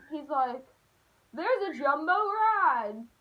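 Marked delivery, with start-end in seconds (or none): 1.3-2.9 toned-down, slow mild yell with ride stretched out. Retelling papa waking the house up: imitating papa screaming. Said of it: "he's screaming".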